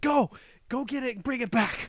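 mock shrill, very high, loud yelling. Retelling what a very loud lady shouted, imitating a loud lady yelling. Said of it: "this very loud lady".

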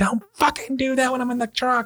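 shrieking at very high pitch. Retelling a ride in the truck with the wife: imitating wife screaming. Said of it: "fucking screaming at me".

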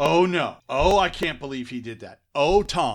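high, loud, scandalized dismay.

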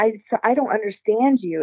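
usual speaking voice

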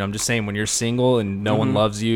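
ordinary talk

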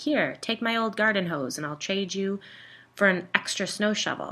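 usual speaking voice

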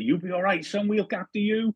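put-on Bristol West Country accent. Retelling what a Bristol lad said during a pitch invasion, in a West Country accent. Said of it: "in that lovely West Country accent".

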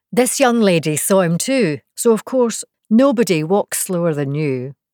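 ordinary delivery

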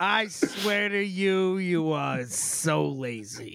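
put-on voice of an aging screen comedienne. Retelling what someone said to them, in a Lucille Ball impression. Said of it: "went from a whiny voice to Lucille Ball".

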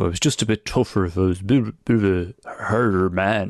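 put-on dumb, silly, mocking voice. A runner mocks the toughen-up view of fatigue mid-race, in a put-on stupid voice. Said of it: "I say it in that stupid voice".

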